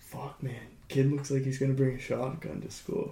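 mock muttering under breath. Retelling what a student said about the speaker: imitating muttering under breath. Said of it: "I hear him under his breath".

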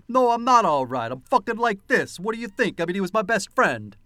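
textbook, thick, heavily laid-on put-on Brooklyn accent. Speaker retells a man's reply when asked if he's all right; Brooklyn accent. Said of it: "what a Brooklyn accent sounded like".

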